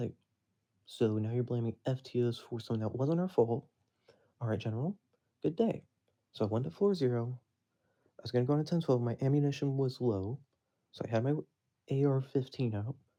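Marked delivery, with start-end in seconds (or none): none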